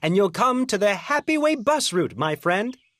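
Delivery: ordinary delivery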